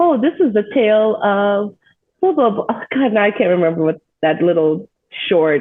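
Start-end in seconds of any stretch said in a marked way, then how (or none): 0.0-2.6 cartoon-style storybook narration voice, like an opening. Retelling a cartoon's opening line: imitating a cartoon intro narrator. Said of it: "that's exactly what the intro sounded like".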